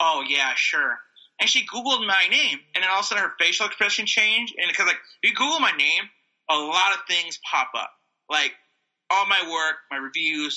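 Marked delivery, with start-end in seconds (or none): 0.0-1.0 mock dismissive, lower and slower. Retelling a woman's eye-rolling reaction, imitating her dismissive tone. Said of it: "rolled her eyes like".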